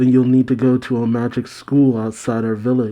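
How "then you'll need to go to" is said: usual speaking voice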